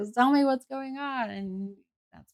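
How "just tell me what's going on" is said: put-on, pitched-up yelling as if into a phone. Retelling a phone call taken in a salon, the speaker repeats her shouting: retelling yelling at the phone. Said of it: "I'm like yelling at the phone".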